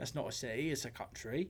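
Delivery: very quiet put-on British accent with Southern twang. Joking to another speaker in a put-on british accent with southern twang. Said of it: "You sounded a little more yeehaw Brit than Brit".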